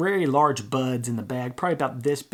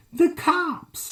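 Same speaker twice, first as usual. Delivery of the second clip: excited, very high-pitched sudden blurt; 3 dB louder than usual. Retelling Carl's answer to Louis's question, imitating Carl's high-pitched voice. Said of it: "he talks in a high-pitched voice".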